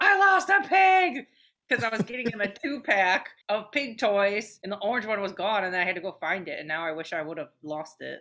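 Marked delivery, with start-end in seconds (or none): 0.0-1.3 very shrill, very loud, slow, drawn-out scream. Speaker retells what they yelled after stepping away from a store counter: retelling a scream. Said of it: "I screamed out".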